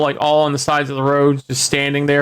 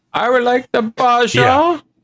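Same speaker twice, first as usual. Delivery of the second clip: very high voice in a put-on Dutch accent; 9 semitones higher than usual. Joking about the drink name in a Goldmember impression. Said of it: "That was a good gold member impression".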